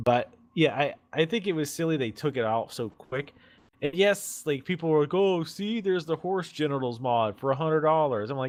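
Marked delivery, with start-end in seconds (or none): 5.1-8.3 put-on sneering, derisive mocking voice. Quoting what people were saying about a mod: imitating people in a mocking voice. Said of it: "when you do your mocking voice".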